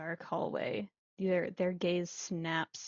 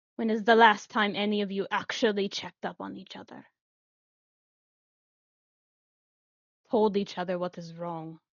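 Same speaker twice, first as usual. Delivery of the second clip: louder, malicious tone, full of malice; 6 dB louder than usual. Voicing a character swinging the door open, answering Juliet: full of malice. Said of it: "are you talking like this all of a sudden".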